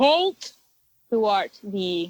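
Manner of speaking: ominous, slow delivery. A game master voices a hidden figure challenging the party, in a loud booming voice. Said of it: "A loud booming voice says".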